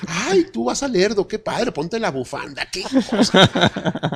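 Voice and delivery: mocking, high, sing-song, gushing tourist voice.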